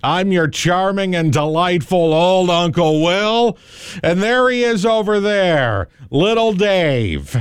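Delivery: high put-on announcer voice, name stretched out. Opening an animal stories segment with a Larry Lujack impression. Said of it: "Thought I could do a Larry Lujack impression".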